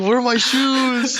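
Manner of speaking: shrill, loud yell at a very high pitch. Picturing a German person yelling with their shoes on, imitating a German person yelling. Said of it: "picturing like a German person just yelling".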